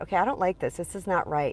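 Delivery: plain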